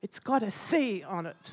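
mock unfriendly tone. Retelling what the serving lady said back to her: mimicking a not-very-nice voice. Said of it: "in a not a very nice voice".

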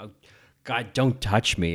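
rejecting, recoiling delivery that pushes away outright. Recalling a favourite line reading from a crying scene: Meryl Streep line reading. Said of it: "this line reading of, of Meryl just being like".

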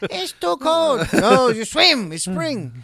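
slow mock Chinese accent. Joking about swimming in spring with another speaker: put-on Chinese accent.

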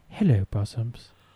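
prim, refined, proper voice. Showing how the character says hello on TV: refined Mrs. Doubtfire voice. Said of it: "it's much more refined".

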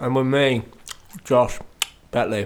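muffled speech with mouth full. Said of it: "a whole load of jelly beans in my mouth".

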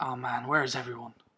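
ordinary talk

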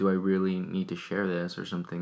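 ordinary delivery

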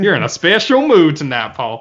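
loud, swooping Southern accent. Repeating the earlier remark to Paul, this time with a southern accent. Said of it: "like in a southern way".

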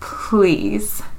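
broken, heartbroken, very sad pleading voice. Retelling a scene where a crying man speaks, acting out a heartbroken plea. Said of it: "one very sad, very heartbreaking".

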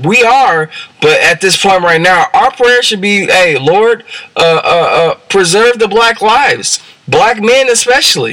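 heated fervent outburst. Making a point to listeners, yelling. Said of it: "I'm sorry for yelling".

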